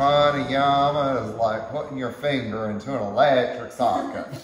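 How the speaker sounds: bad, clumsy put-on Texan accent, loud. Quoting a teacher from Texas, Aaron, on pranayama, in a bad Texan accent. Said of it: "Did I get my Texan accent down okay?".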